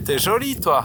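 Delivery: poor attempt at Swiss accent. Joking among a group of friends, saying a line in a bad Swiss accent. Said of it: "C'est pas ça l'accent suisse".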